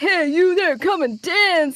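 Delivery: high, arcade machine announcer voice. Retelling walking past an arcade dance machine: imitating a dance machine. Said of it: "I would walk past one specifically, like".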